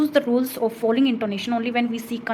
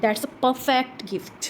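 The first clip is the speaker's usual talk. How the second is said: tone drops low, falling pitch on gift. Demonstrating exclamation intonation in a lesson, falling pitch on gift. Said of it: "मेरी जो टोन है gift पे क्या हो जाती है, लो हो जाती है, फॉल हो जाती है।".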